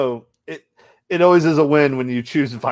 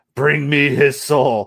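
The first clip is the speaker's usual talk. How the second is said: slow, drawn-out demonic yell. Describing a game they watched, the speaker imitates a demon; imitating a demon yelling. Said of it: "pretty much this like demon yelling".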